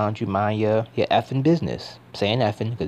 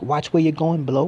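poor, put-on cockney accent, pitched up; 6 semitones higher than usual. Retelling what a bald man said to a kid, in a poor cockney accent. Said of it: "Forgive me for the poor sort of cockney accent".

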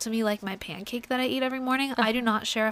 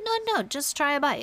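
doting Italian grandmother voice, urging tone; 4 semitones higher than usual. Acting out a grandmother urging more food: imitating Italian grandmother. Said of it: "And she's like".

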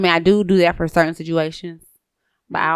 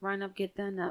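soft, limp, deflated delivery with no energy. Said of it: "you gotta say that with more energy".

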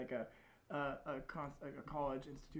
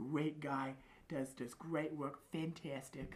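very slow, put-on New York accent, dragged out. Showing how he talks about a friend: Donald Trump impression. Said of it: "trying to sound like Donald Trump".

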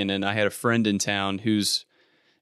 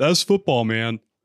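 offhand, tossed-off, like a done deal; 3 dB louder than usual. Quoting a coach's catchphrase to the co-host: Dan Campbell impression. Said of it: "just finish up with that".

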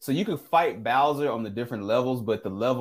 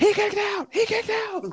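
play-by-play announcer call, pitched very high. Recalling a wrestling video game intro: Jim Ross impression. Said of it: "I can still remember Jim Ross on No Mercy".

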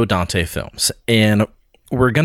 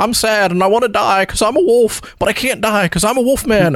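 put-on drawling old-movie voice, higher; 11 semitones higher than usual. Imitating Lawrence Talbot's lament in a bad Jim Stewart voice. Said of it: "he sounds like Jim Stewart".

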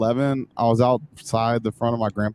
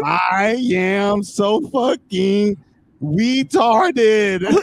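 mock shrill, very high frustrated-kid yelling; 9 semitones higher, 3 dB louder than usual. Speaker recalls yelling in the front yard at ten; reenacting own childhood yell. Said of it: "I'm yelling".

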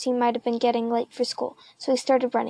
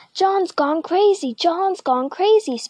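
high, shrill schoolboy yelling out; 6 semitones higher, 3 dB louder than usual. Schoolboy Spider Wilson yells at John; yelled. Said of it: "Spider yelled".

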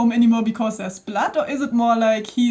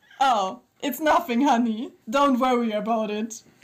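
put-on Italian-accented man's voice. Reading a story aloud, the speaker voices the man in an Italian-accented man's voice. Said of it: "Combine Italian with men's voice".

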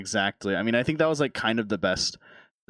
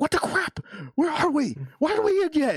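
acted, very high, shrill, swooping, furious rant. Retell what a streamer said during his IRL stream, imitating someone super pissed. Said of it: "he was like super pissed".

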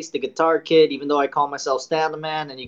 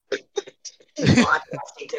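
very slow, halting words choked out. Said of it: "Sorry, I choked on a peanut".

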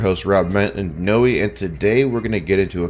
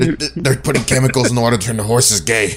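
put-on ranter voice, pitched higher; 4 semitones higher, 3 dB louder than usual. Joking about pizza box chemicals: Alex Jones impression. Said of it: "I'm glad you picked up on my Alex Jones".

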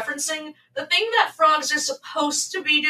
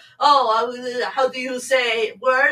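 fake French accent; 3 semitones lower than usual. Imitating the stereotype of French people asking for a word: stereotyped French accent. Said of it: "the stereotype of French people".

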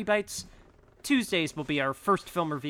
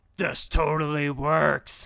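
fake robotic hero voice, louder; 5 dB louder than usual. Joking about a plane in a movie mashup: Optimus Prime voice. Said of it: "if it was Optimus Prime's voice just going".

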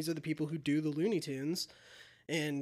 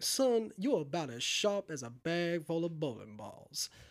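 put-on refined southern gentleman voice. Quoting a character's lines while praising him, fine southern gentleman voice. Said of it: "great lines like".

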